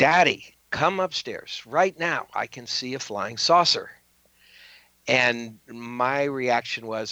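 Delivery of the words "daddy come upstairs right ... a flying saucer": mock mild shout, calling out from afar. Retelling a daughter calling down from her bedroom: imitating a shout. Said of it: "she shouts down from the second floor".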